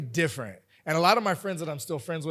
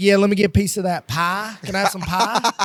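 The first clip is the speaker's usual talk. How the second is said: put-on old-fashioned country twang way of talking; 3 semitones higher, 6 dB louder than usual. Retelling first arriving and ordering pie: imitating own past country twang. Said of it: "I had a twang".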